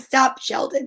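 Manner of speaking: ordinary talk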